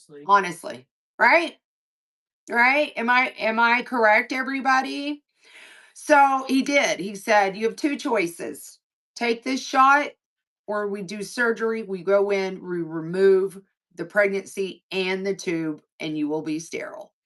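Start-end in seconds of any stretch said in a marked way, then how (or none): none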